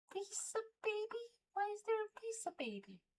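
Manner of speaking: very high, soft, baffled squeak.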